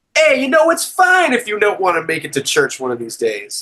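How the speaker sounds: laid-back, easygoing put-on Chicago accent. Contrasting an Italian pope with the Chicago one, imitating him; Chicago accent. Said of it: "that's my Chicago like voice".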